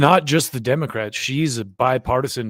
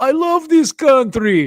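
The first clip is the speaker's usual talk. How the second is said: put-on overplayed Russian accent, very high, loud, drawn out; 13 semitones higher, 6 dB louder than usual. Comparing a speaker's accent to a Russian comedian: Yakov Smirnoff impression. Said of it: "What's that Russian comedian's name ... Yakov Smirnov. He's like".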